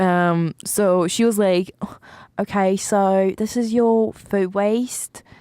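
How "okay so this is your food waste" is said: made-up, put-on British accent. Retelling what the landlord said about bins: imitating landlord in british accent. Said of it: "this is the British accent".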